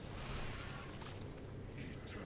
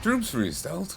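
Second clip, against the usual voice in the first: high, chipper soldier voice. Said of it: "how I keep deciding to read it".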